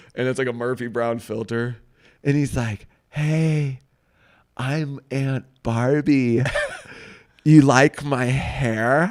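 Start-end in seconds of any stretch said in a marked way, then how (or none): 3.1-9.1 slow drawled imitation voice. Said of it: "one of my Aunt Barbie".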